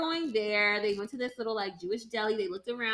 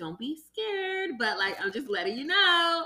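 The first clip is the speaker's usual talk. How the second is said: play-acted, said through laughter; 4 semitones higher than usual. Retelling what a woman said to a nervous man, imitating her laughing. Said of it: "The way she was laughing".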